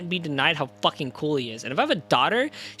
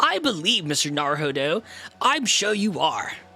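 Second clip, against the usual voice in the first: slow, laid-back, drawling surfer dude voice. Imitating a game character's line after praising the voice he gave him: Sholmes voice. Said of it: "I gave him a pretty good voice".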